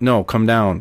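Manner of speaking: flat, level, machine-like robotic monotone. Retelling the lieutenant's order to come down, in a flat monotone. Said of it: "it's just like really monotone".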